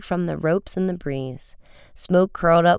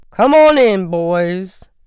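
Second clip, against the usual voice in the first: big, very loud, very slow booming voice; 3 semitones higher, 8 dB louder than usual. A police chief calls two boys into his office through the open door, booming. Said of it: "boomed Chief Colling".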